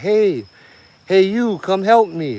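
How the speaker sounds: put-on small girl's voice, high, slow, drawn out. Retelling a voice that kept calling out, imitating a little girl's voice. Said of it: "that little girl's voice".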